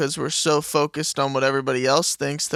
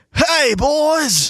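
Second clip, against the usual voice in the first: loud, very high put-on Australian dad accent; 12 semitones higher, 7 dB louder than usual. Comparing accents, imitating a dad in Australia: Australian dad accent. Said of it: "Sam's dad in Australia".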